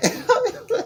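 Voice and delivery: high-pitched helpless giggling through the words. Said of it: "I cannot stop laughing".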